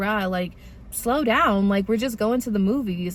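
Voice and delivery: ordinary talk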